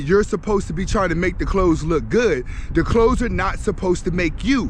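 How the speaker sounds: plain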